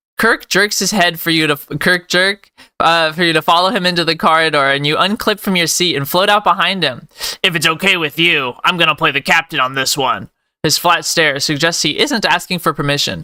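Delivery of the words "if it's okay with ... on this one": put-on gruff character voice. Voicing Kirk taking the captain's role: Titus Hardy voice. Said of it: "I'm kind of doing a Titus Hardy voice".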